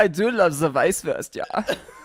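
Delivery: put-on German accent.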